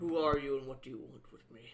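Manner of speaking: loud, rough, gruff tough-guy thug voice. Narrating a scene, speaker voices a thug who looks at the listener: gruff thug voice. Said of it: "in a gruff voice you hear".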